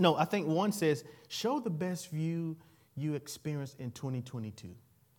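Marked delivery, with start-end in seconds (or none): 1.3-4.7 put-on small ai voice, slower. Quoting a prompt that people are responding to, little AI voice. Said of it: "it's like this little AI voice".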